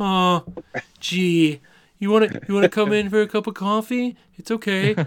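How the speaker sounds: very high, slow, nerdy stammering voice. Impersonating the nerdy neighbor from the movie: Louis Tully impression. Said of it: "It's a pretty good impression".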